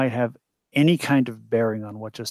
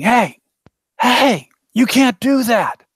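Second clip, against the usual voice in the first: very high, drawn-out scream at full volume; 10 semitones higher, 4 dB louder than usual. A player's character runs toward a van pulling away, screaming.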